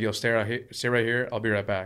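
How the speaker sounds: ordinary talk, nothing marked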